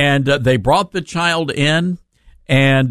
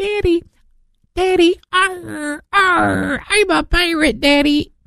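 put-on child voice, much higher, slower. Retelling what a little child said to his father, imitating a small child. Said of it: "child came to him and said".

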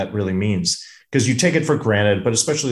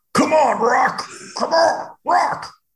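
bad, very high, slow, drawn-out voice. Imitating an actor's famous line as a film character: terrible Burgess Meredith impersonation. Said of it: "That's a terrible Burgess Meredith impersonation".

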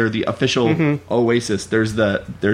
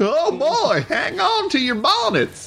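very high, very slow, drawn-out zany prospector voice. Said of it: "is this crazy prospector voice?".

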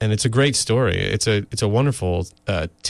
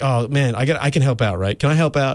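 put-on giddy, high-pitched eagerness like a little kid; 5 semitones higher than usual. Retelling a friend's eager offer to help: imitating Skip sounding like a giddy kid. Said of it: "Skip sounded, like, really like a giddy little kid".

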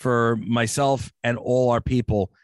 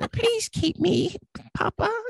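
tiny, little, squeaky voice, very high. Recalling playing a FedEx package, the speaker uses a little tiny voice. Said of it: "in a little tiny voice".

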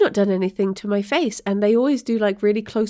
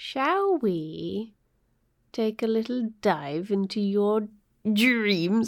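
theatrical, playful villain voice, drawn-out we; 5 dB quieter than usual. Proposing the next segment to the other speaker, in a mock villainous tone. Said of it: "saying this in such a villainous way".

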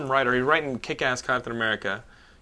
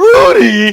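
very high, loud yell, voice breaking; 15 dB louder than usual. Reenacting a movie scene with another speaker: imitating a voice crack. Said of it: "His voice cracks".

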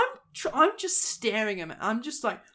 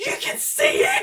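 loud, full-voiced shouting; 6 dB louder than usual. Retelling standing outside near the Ferris wheel: retelling own scream. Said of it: "I just scream out loud".

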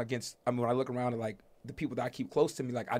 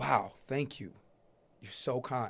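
put-on amazed, grateful tone, quieter; 5 dB quieter than usual. Speaker retells an elderly woman thanking them for opening the door, imitating amazed thanks. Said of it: "the way she said".

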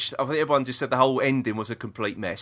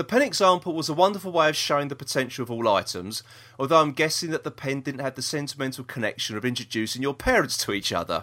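ordinary delivery

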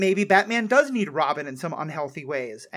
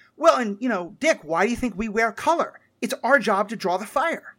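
acted, brash, cocky, nothing-can-hurt-me teenage swagger; 4 semitones higher than usual. Quoting a line from Titans in a brash nothing-can-hurt-me way. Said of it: "brash seventeen, eighteen-year-old, nothing can ever hurt me way".

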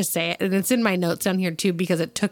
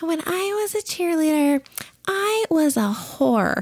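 very high-pitched, small little voice; 10 semitones higher than usual. Speaker imagining Michelle Duggar describing being a cheerleader, in Michelle Duggar's little voice. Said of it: "I really wanted her in her little voice just to be like".

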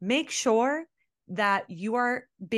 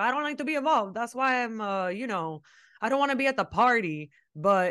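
put-on Miami-style accent. Retelling what a man said when asked what he was doing, Frankie Diddle voice. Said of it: "Do you realize you're using the Frankie Diddle voice?".

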